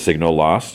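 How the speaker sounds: usual speaking voice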